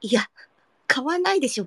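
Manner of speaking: ordinary delivery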